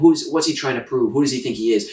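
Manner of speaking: plain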